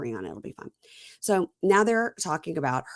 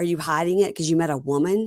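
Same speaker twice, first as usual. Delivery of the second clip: ordinary talk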